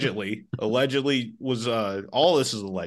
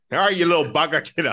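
put-on Indian accent, loud and high; 5 semitones higher, 5 dB louder than usual. Speaker practicing accents, trying out an Indian accent. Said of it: "my Indian accent's really getting there".

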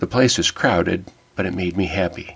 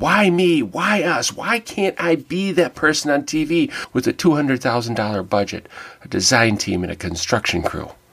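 high yell. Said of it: "I started yelling to myself".

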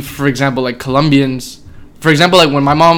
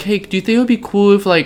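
high, small, whiny put-on little baby voice; 5 semitones higher than usual. Retelling asking for something, imitating own whiny baby voice. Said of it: "I turned on this little, like, bitch voice".

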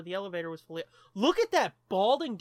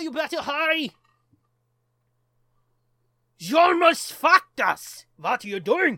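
fake German accent, higher and louder; 7 semitones higher, 9 dB louder than usual. Voicing a movie character while watching the film: put-on german accent. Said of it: "Is it still okay to do a German accent?".

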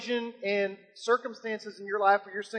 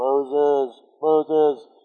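very deep voice, calling out; 6 semitones lower, 6 dB louder than usual. Speak as God calling to Moses from within the bush, in a real deep James Earl Jones voice. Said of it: "like the real deep".

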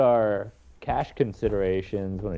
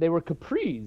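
cracked voice breaking on the word "capris"; 7 semitones higher, 3 dB quieter than usual. In a conversation about old nylon pants, voice cracking on 'capris'. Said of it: "my voice cracked saying capris".

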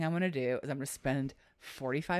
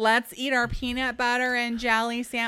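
mock screech, full volume, higher and louder; 10 semitones higher, 9 dB louder than usual. Retelling how a neighbor yelled at her kids: imitating someone screeching. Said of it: "screeching at the top of her lungs".

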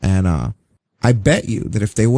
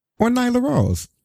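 sarcastic, very high-pitched, throwaway delivery. Asking who deserved the first AEW female action figure: sarcastic. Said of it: "I'm being sarcastic".

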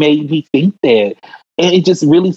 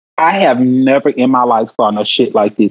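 ordinary delivery

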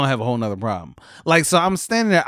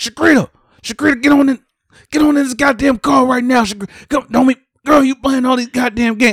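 put-on enraged man hollering, furious, shrill, very high, loud; 9 semitones higher, 6 dB louder than usual. Retelling a man ordering a woman back into his car, imitating an upset man. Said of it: "this man was so fucking upset".

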